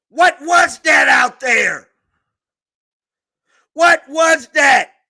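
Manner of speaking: mad, angry shouting. On his channel, mad at the coaching staff: angry yelling. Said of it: "I'm yelling because I'm mad".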